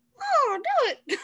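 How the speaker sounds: very high-pitched cartoon mouse character voice. Answering a request to say the line as Mickey Mouse: Mickey Mouse voice. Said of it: "How about Mickey, Mickey Mouse saying do it?".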